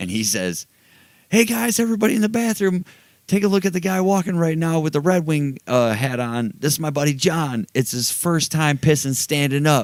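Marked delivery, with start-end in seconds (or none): 1.3-9.9 put-on yelling, higher pitch. Retelling a buddy calling out to a crowded restroom: imitating someone yelling. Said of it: "he starts yelling".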